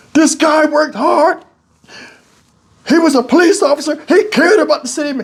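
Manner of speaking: put-on tearful cracking voice. Retelling a lawyer's closing words to the jury: imitating a voice breaking like crying. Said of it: "his voice started breaking like he was crying".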